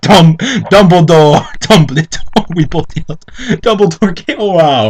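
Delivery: plain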